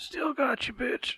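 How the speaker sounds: very high, faint, quiet, raspy dying breath. Narrating a tabletop game, voicing a dying enemy's last words in a quiet raspy dying breath. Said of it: "In a very quiet, raspy, dying breath".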